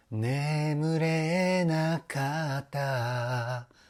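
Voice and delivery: breathy voice, air in each drawn-out syllable. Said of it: "僕がやるとこういう感じの声になるかな".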